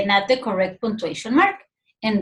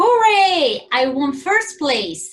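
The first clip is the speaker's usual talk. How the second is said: very excited cheer, drawn out; 4 semitones higher, 4 dB louder than usual. A teacher reads a worksheet sentence aloud with excited cheering. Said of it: "So this person is very excited".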